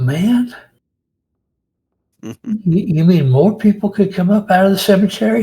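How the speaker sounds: folksy voice, startled and alarmed. Locals hear that the dead may be walking and react in alarmed surprise. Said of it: "Man, he is a famous musician".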